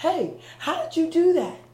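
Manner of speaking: loud high yelling. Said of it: "You wanna yell up".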